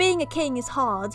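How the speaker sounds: worst possible put-on British accent. Reading this part aloud in the worst british accent possible. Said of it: "I'm gonna read this part in like the worst British accent possible".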